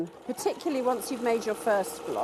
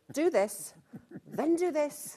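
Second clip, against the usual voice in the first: slow, commanding military-style delivery; 6 semitones higher than usual. Describing how she writes a pattern, compared with her co-host's: like a military commander. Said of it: "it's like a military commander".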